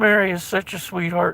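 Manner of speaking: normal talking voice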